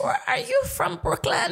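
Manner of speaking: bad put-on Caribbean accent, pitched very high. Retelling what a lady who turned around asked, bad caribbean accent. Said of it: "my bad Caribbean accent".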